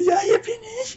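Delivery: very high, piping, squeaky little voice. Describing a game's bearded unit with an axe, the speaker quotes it: squeaky voice. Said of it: "so eine piepsige Stimme".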